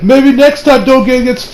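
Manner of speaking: heavily smug, mocking tone. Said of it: "He's like".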